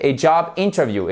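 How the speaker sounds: interview stressed on first syllable IN, English way.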